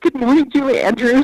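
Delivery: high, clumsy, awkward, starstruck delivery. Retelling bumping into a star and greeting her: imitating own awkward starstruck greeting. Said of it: "like a total idiot".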